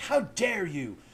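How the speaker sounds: affronted, offended, mad and indignant outrage. Acting out a man upset that clowns are criticized: mock-indignant anger. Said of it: "I believe this is the correct tone of voice. Like, he's all mad".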